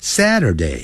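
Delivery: Saturday sliding down from high to low. Going through english day names: high-to-low fall on 'saturday'. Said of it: "由高往低这样念".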